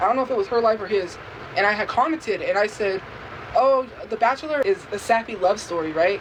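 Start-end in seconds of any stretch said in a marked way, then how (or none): none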